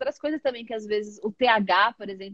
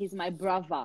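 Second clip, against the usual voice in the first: put-on British street pronunciation, brother with v, lower, quieter, faster; 3 semitones lower, 7 dB quieter than usual. Speaker explains british slang, demonstrating how people from the hoods say brother with v. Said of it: "o pessoal lá do, do- das quebradas não fala brother, fala com V".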